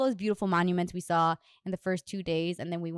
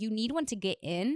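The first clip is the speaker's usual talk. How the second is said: ordinary talk, nothing marked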